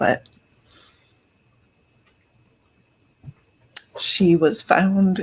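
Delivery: voice holding back tears. Talking about the outcome of a case, holding back tears. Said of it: "I am trying not to cry anymore".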